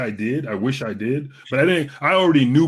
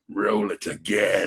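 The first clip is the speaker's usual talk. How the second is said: low, dropped, deep imperial villain emperor voice; 5 semitones lower, 4 dB quieter than usual. Remembering a live event right by the stage, quoting the actor in Emperor voice. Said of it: "he says in his Emperor voice".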